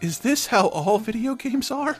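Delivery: put-on horrified tone. Retelling the girlfriend's question about video games: imitating a horrified girlfriend. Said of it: "kind of horrified".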